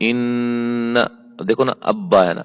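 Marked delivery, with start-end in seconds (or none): 0.0-1.0 nasal ghunna held one alif length. Showing how to read with ghunna: nasal ghunna held one alif. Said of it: "یہاں ہم غنہ کریں گے".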